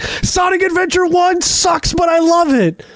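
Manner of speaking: screamed at very high pitch. Game reviewer describing himself screaming into the night sky, retelling a scream. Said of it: "screaming into the night sky".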